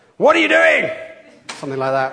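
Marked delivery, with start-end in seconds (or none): 0.2-0.9 very high, very loud, cross telling-off parent voice. Listing voices people know from parents: cross parent voice. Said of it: "your parents' cross voice".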